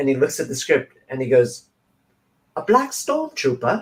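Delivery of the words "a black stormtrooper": put-on British accent spoken at very high pitch. Retelling a Saturday Night Live audition sketch with Finn: British accent. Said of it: "With his British accent".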